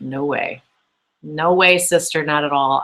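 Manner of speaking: plain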